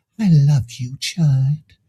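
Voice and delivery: put-on soft whisper. Retelling a courtroom moment, the speaker quotes a woman, retelling a soft whisper. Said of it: "And she whispered ever so softly".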